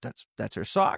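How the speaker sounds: tearful, choked-up voice breaking through tears. Retelling a film scene where a father sees his daughter's sock: imitating Keller choking up. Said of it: "he just choking up tears".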